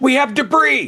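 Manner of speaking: shrill, very high, excited shriek. Mocking Reed screaming the obvious about a tornado, imitating Reed screaming. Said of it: "without screaming the obvious".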